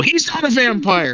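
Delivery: acted, high-pitched, insistent scream, repeated over and over. Retelling how a player's character reacted to being called a vampire: imitating someone screaming. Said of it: "spent the next year screaming at people".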